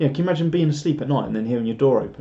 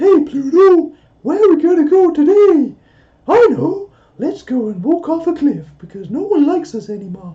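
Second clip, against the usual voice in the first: squeaked out high and loud; 10 dB louder than usual. Speaker complains about a cartoon voice, then does a Mickey Mouse impression. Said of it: "how does Mickey go again?".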